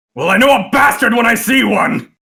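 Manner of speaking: high, loud, indignant shouted dwarf voice. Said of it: "and goes".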